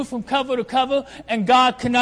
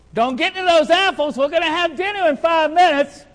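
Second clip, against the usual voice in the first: mild, half-yelled, raised voice; 4 semitones higher than usual. Speaker recalls a mom calling out to a child eating apples, imitating a mother yelling. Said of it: "you hear your mom yell".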